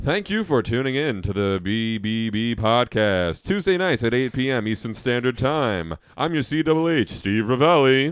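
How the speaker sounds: slow, put-on radio announcer voice. Podcast guest thanks people for tuning in using a put-on radio voice. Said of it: "I'm gonna put on my radio voice".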